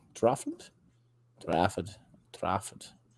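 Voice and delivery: hushed attempt at an English Trafford accent. Speaker tries out a word, attempted english accent. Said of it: "I can't do an English accent".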